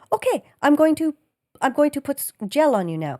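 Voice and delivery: bad, off-the-mark put-on Korean accent. Recounting a procedure, voicing the woman attending to him; Amy in a bad Korean accent. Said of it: "This is not a Korean accent".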